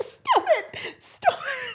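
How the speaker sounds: panicked, freaking out, very high-pitched, very slow. Retelling how someone reacted to being teased: imitating someone freaking out. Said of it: "She's freaking out".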